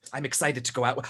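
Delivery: hushed half-whisper with no voice. Speaking in character where another character can still hear: half-whispering. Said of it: "Why am I still whispering?".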